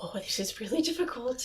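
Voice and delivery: hushed, breathy whisper. Imitating the Sorting Hat whispering into people's ears: whispering like the Sorting Hat. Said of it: "he's whispering into people's ears".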